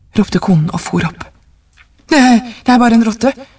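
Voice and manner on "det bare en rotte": put-on quavering old man's voice, high and trembling. Reading a story, the old man answers his wife after the knocking: trembling voice. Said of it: "sa den gamle mannen med skjelvende stemme".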